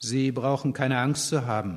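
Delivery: plain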